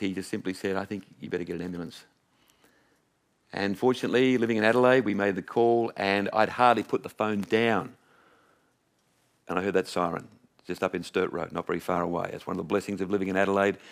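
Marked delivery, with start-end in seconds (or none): 0.8-2.0 mock, put-on voice breaking on the words. Retelling a father's words during his heart attack: imitating a broken voice. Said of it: "with a broken voice".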